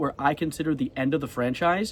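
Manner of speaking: ordinary delivery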